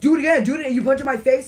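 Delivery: loud, high-pitched, cocky tough-guy voice. Retelling a fight, quoting the other kid coming back: imitating a tough-guy taunt. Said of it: "coming at me again like a Billy Badass".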